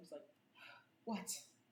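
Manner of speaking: put-on sniffly teary voice. In an improv scene, a sobbing woman being comforted looks up, sniffling. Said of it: "just sniffling".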